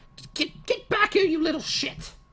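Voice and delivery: put-on old lady character voice. Voicing the old lady heard after a crash in the distance: old lady character voice. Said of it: "the old lady that you'd spoken to originally, she, like".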